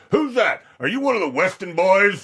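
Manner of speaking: very high, loud hollering yell. Retelling a grandfather calling out at an arriving visitor: imitating grandfather yelling out. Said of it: "he's yelling out".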